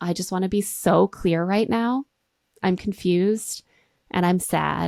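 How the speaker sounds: put-on sweet smiling delivery. Retelling a rejected woman's words to the man: imitating a sweet, smiling delivery. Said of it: "she smiles so sweetly".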